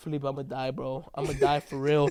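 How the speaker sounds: weepy, tearful, crying voice. Retelling a dream phone call in which Diego cries: imitating Diego crying. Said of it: "this motherfucker's crying".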